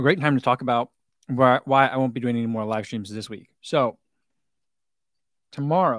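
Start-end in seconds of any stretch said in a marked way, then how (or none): 3.6-6.0 talking with mouth full, chewing while speaking. Streamer telling viewers about upcoming plans: talking with mouth full. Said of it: "sorry, a mouthful of muffin".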